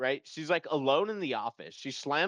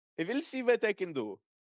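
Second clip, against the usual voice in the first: put-on pitched-up Indian accent; 7 semitones higher than usual. Speaker retells a man picking up the phone, quoting him in an indian accent. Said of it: "he has an Indian accent".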